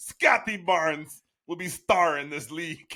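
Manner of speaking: loud, slow, thick put-on European accent. Retelling a coach's press conference, in Darko Rajaković's thick European accent. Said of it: "he has that thick like European accent".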